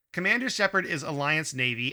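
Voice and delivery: plain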